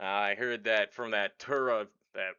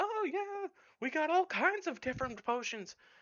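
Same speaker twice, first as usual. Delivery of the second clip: put-on elderly woman character voice, higher pitch. Storyteller voicing a halfling who brings out potions, elderly halfling woman voice. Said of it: "looks like she's about in her eighties".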